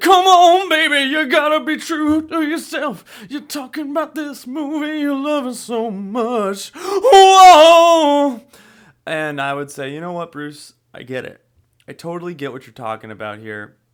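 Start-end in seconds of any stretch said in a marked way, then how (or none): 0.0-8.4 very high, loud, earnest rock-star belting, slow, stretched "whoa". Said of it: "[name] would come in and be like".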